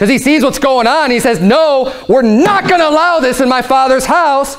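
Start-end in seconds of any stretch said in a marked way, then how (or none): 1.4-4.6 angry, scolding tone. Acting out Jesus rebuking traders in the temple: acting out an angry rebuke. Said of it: "he comes in and he's angry".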